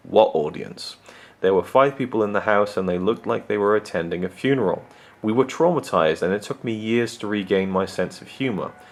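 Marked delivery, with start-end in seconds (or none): 0.1-0.9 sourest imaginable, grumpy tone. Retelling how the theater manager answered their request to peek inside: sour reply. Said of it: "In the sourest tone of voice imaginable".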